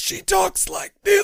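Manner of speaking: high, raspy, rough, strained voice. Describing a character left with strained vocal cords, demonstrating: Red's strained voice. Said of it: "her vocal cords are strained".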